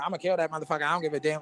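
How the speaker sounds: put-on woman's voice.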